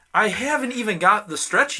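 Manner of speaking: high, loud, frantic protesting tone.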